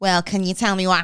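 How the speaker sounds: mock abrupt, harsh tone. Showing how a question sounds to others: imitating sounding abrupt and harsh. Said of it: "it sounds like I'm going".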